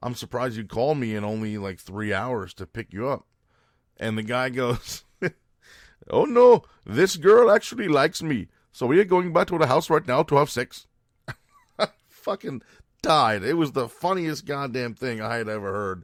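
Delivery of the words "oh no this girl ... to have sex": crude fake Indian accent, very loud and high. Retelling what a guy said in front of the girl with him, bad indian accent. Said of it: "here comes the shitty Indian accent".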